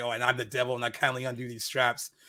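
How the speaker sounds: ordinary talk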